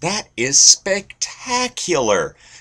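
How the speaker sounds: put-on very high, enthusiastic Midwest accent. Showing how a man on a show you watched with your buddy talks, imitating his excited accent. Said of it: "And he says it like that".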